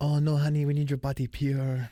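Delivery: put-on Brazilian accent. Joking about how a wife would stop a tattoo: Gisele Bündchen impression. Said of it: "She's like".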